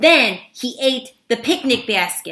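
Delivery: plain reading voice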